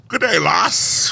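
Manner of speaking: failed Irish accent. Invited to read a line in his finest Irish brogue, bad Irish brogue. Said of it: "I cannot do an Irish accent".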